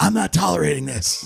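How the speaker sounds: put-on raspy guttural voice. Retelling how a woman answered a press conference question, imitating a raspy, guttural voice. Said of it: "she had this like raspy, guttural voice".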